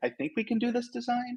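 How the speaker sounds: timid rising upturn at the end of design. Recalling timid past presentations before mentoring: rising at the end on design. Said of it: "kind of almost using upward inflections, like".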